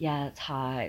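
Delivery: put-on soft, hushed little schoolgirl voice. Comparing a film character's voice to a celebrity: Paris Hilton little schoolgirl voice. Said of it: "kinda like what Paris Hilton does".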